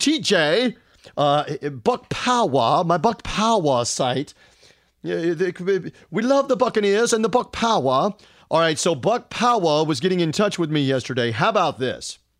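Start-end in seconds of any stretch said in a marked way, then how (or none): 0.0-8.1 put-on slow British accent. Imitating a friend talking about his Buck Power site: British accent. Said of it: "I'll even do it with my British accent".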